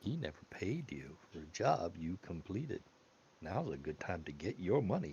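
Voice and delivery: soft, intimate half-whisper. A woman in the story half-whispers into a man's ear, half-whispering. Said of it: "She whispers in his ear".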